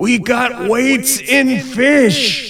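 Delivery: very high, slow announcer shout, "fish" stretched out. Speaker quotes a fishing tournament director, imitating Jason Fisher shouting. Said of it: "I don't know if that was a good impersonation of Jason Fisher".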